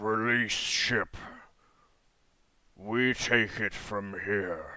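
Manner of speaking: gravelly, scraping creature voice like grinding stone, metal. Voicing the Peck as it addresses the captain of the vessel: very deep, gravelly voice. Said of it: "it speaks in a very deep, gravelly voice, almost like like stone and metal scraping".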